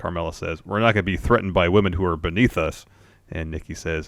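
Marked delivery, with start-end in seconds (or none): none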